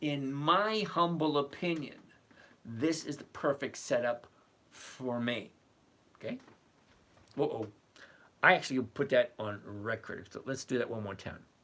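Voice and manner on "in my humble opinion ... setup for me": very slow, deliberate, laid out word by word. Speaker giving his opinion so he is not misquoted, said really slowly. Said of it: "I'm going to say it really slowly".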